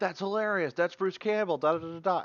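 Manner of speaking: excited, freaked-out outburst.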